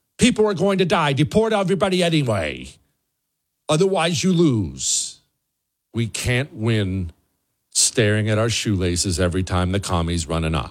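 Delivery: angry, heated, swooping rant-like delivery. Giving a warning to Republicans who currently hold power: mad. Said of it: "If I sound mad".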